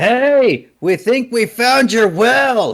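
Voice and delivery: very high, loud, far-carrying shout. Calling out to the others as Stig: yelling in character. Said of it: "As Stig yelled".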